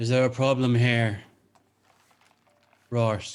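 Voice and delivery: booming, loud resonant voice. Voicing a cloaked figure appearing from a portal: booming voice. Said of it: "Bit of a booming voice".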